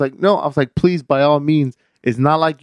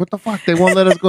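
put-on agitated old man voice, higher; 4 semitones higher than usual. Retelling what an old man at the airport told his wife: imitating an agitated old man. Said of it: "he's telling his wife, he's like".

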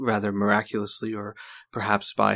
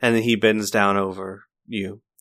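usual speaking voice

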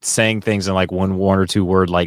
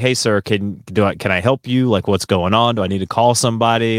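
ordinary talk, nothing marked

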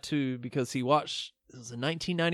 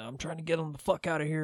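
play-acted, freaked-out, panicked voice; 6 dB quieter than usual. Retelling a movie scene where the clerk is freaking out: imitating a panicked clerk. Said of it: "the clerk's freaking out".

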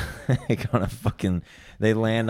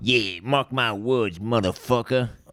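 tough-talking 1950s wise-guy gangster voice; 3 semitones higher than usual. Backing up a boast to the other speaker, in a 1950s gangster voice. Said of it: "What is that like a gangster from the 50s?".

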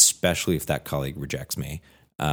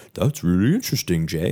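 put-on cartoon dog voice; 3 semitones higher than usual. Speaker voicing his dog talking back to him, in a Scooby-Doo voice. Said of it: "in a Scooby-Doo voice".

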